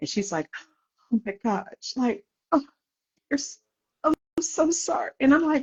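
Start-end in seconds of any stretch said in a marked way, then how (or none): 1.1-5.1 mock weeping, sobbing, tearful voice. Retelling a doctor's visit where the nurse was crying: imitating a crying nurse. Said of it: "The nurse is crying her head off".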